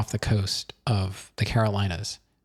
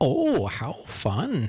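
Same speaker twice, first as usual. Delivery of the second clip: high-pitched Minnesotan accent; 6 semitones higher than usual. Trying one of the funniest accents, from once living there: Minnesota accent. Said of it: "one of the, the funniest accents, I used to live in Minnesota".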